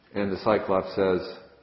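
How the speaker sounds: ordinary delivery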